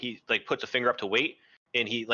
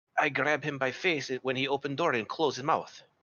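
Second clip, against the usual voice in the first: hushed whisper; 3 semitones higher than usual. Playing a character in a group scene, whispering. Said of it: "And he's gonna whisper".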